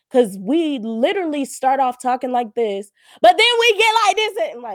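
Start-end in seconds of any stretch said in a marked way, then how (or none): 3.2-4.3 getting loud, very high-pitched and rushed. A speaker advising listeners, demonstrating how their tone gets loud. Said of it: "Why does your tone get loud?".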